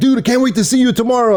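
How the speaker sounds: very high, fast, bad put-on Swedish accent. Quoting a message received the night before: horrible swedish accent. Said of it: "in a horrible Swedish accent".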